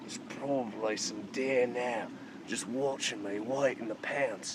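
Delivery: low, hushed whisper under the breath. Whispering while searching for fresh water in the middle of nowhere. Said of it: "The reason I'm whispering".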